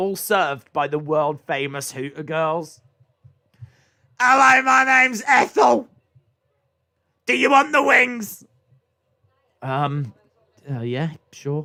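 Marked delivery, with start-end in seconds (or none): 4.2-8.5 loud, high, brash shouting voice. Acting out a Hooters waitress taking an order: Ethel the waitress shouting. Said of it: "Can you stop shouting at me".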